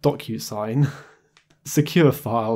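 chuckling through the words.

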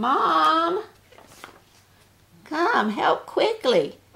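very high calling out, the word mom stretched long. Narrator reads a daughter calling for her mother, calling out. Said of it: "a voice calling".

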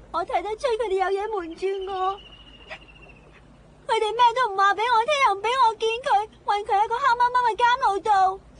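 tearful and distressed. Speaking to someone who offers to help free a prisoner, crying, upset. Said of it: "你不要哭先啦".

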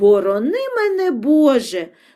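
sudden crying out, exclaiming. Narrator reads the watchman's reply to the gnome's warning, exclaiming. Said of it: "вигукнув сторож".

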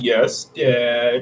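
put-on low, sarcastic, drawn-out teenager voice. Owen answers the warning to turn the party around, super sarcastic teenager. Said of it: "Like super sarcastic teenager".

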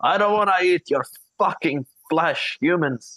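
loud yelling. Voicing a character shouting mid-sleep: shouting in his sleep.

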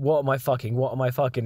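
ordinary delivery

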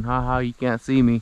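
put-on taunting, mocking laugh. Voicing a hidden bird that laughs at the speaker: put-on mocking laugh. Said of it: "staring at me and laughing at me".

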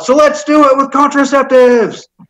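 play-acted yelling, pitched very high. Retelling yelling out at an event where state officials were present; retelling a yell. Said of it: "So I yelled out".

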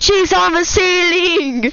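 imitated loud scream. Retelling a game moment when she appeared on the ceiling: imitating own loud scream. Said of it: "I just screamed out super loudly".

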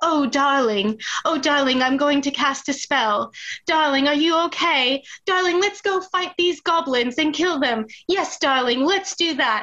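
grand, elaborately fancy put-on voice. Imitating a girl playing a sorcerer in a role-playing game: very fancy voice. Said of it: "she speaks in a very fancy voice and she goes".

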